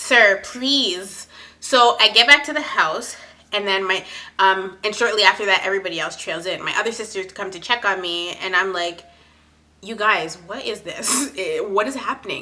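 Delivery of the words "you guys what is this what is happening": acted-out upset, much quieter. Retelling talking to her sisters back at the house, retelling being upset. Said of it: "getting more and more and more upset".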